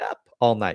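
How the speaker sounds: suggestive delivery loaded with innuendo. Speaker recalls a woman's line delivery on Up All Night, imitating a really high voice. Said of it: "She'd have this really high voice".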